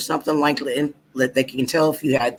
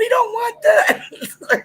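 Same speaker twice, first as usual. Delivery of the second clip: put-on very high-pitched screaming, crying child voice. Recalling getting booster shots as a kid, imitating kids screaming. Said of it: "a lot of kids were screaming".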